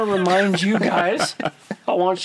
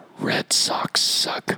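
mock muttering under breath. Retelling what a man said in the middle of talking, muttered under his breath. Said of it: "under his breath he was like".

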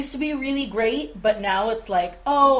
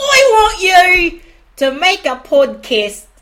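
very loud, high, put-on Cockney accent; 6 semitones higher, 10 dB louder than usual. Explaining why they started the podcast, the speaker quotes the woman who asked them in an Eliza Doolittle voice. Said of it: "She's not Australian".

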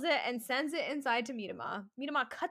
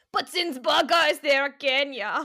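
loud, put-on Austrian accent; 2 semitones higher, 11 dB louder than usual. Commentating a football match after being asked about it, the speaker keeps an Austrian accent. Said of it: "Is that your Austrian accent?".

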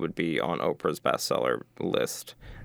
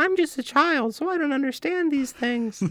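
imitated little-kid voice, pitched higher; 3 dB louder than usual. Improvising a skit, answering a grandma: little kid impression. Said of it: "Britain's little kid impression".

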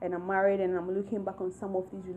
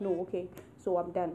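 normal talking voice

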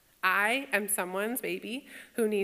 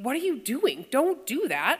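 sharp, cutting, high-pitched delivery; 5 semitones higher, 4 dB louder than usual. Retelling telling students to stop moving tables: imitating own sharp retort. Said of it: "when I say sharply".

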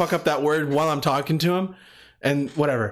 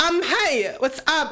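put-on valley girl voice, much higher pitch; 12 semitones higher than usual.

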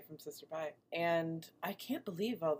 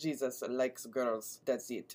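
low, put-on Russian accent; 4 semitones lower than usual. Unable to do other accents, the speaker offers an intro in a Russian accent. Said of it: "That was your Russian intro".

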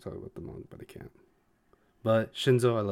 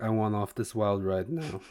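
usual speaking voice

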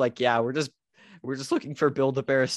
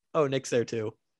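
put-on flat delivery. Retelling how a friend's mom noticed the other visitor: imitating Devin's mom, super unenthusiastic. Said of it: "super unenthusiastic".

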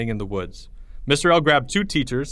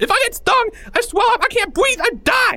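high, terrified, panicked scream with shaking voice; 4 dB louder than usual. Narrating a story as the wasps close in, Porge screaming in panic. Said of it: "Porge screamed quicker now, shaking all over".

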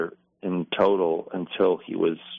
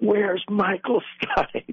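acted, very high, shrill, full-throated, top-of-lungs yell; 13 semitones higher than usual. Retelling a man on stage calling to the audience, the speaker imitates his top-of-lungs shout. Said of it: "just at the top of his lungs".

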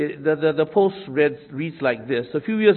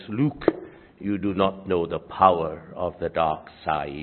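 very low, deep masked sci-fi villain voice; 10 semitones lower, 4 dB quieter than usual. Recalling a line from Star Wars with toy figures: Darth Vader voice. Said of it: "Vader saying in his James Earl Jones voice".

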